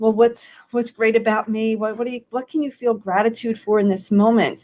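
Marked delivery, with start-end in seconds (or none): none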